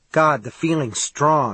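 ordinary delivery, nothing marked

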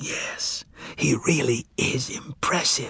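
barely voiced, hushed whisper. Narrator reads a line spoken by one of a group: whispering. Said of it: "whispered one of them".

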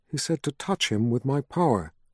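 ordinary delivery

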